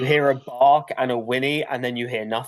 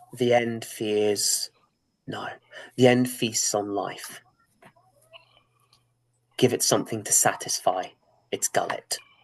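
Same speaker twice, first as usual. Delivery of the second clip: eerie, hushed, whispered otherworldly entity voice; 3 semitones lower, 5 dB quieter than usual. Voicing the hunt as it answers a character's question: whispering. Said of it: "the hunt whispers".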